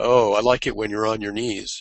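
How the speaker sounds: ordinary talk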